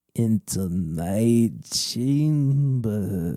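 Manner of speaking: low, with my stretched out. Narrator reads Madame Zeno calling out from the shadows, low voice. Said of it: "you hear a low voice call out".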